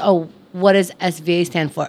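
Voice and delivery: ordinary talk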